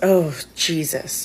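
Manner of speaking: mock annoyed, grumbling mutter under the breath. Retelling a plane passenger's reaction as she claims her window seat, retelling a mutter under his breath. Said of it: "under his breath".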